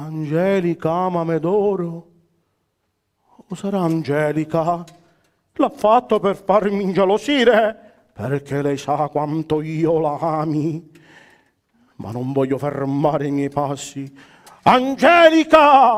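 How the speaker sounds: frantic, raving declamation like a madman. A puppet knight searches for his beloved Angelica, Orlando raving in madness. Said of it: "La pazzia di Orlando - Compagnia Brigliadoro (uploaded 2021) / ho lasciato i miei doveri di cercare [name], la donna che tanto amo, la donna che il mio cuore ha fatto uscire dal petto. / è un pazzo!".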